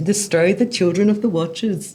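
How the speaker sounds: bad fake Irish accent, high pitch. Reading a passage aloud to another speaker: bad put-on irish accent.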